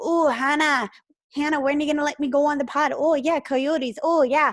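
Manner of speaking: put-on Irish accent. Imitating a guest begging to come on the podcast: imitating a friend with an irish accent. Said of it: "good try on your accent there".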